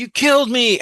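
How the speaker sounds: shrill, very high, loud, acted-out dying scream. Retelling how the stabbed father reacted: imitating a scream.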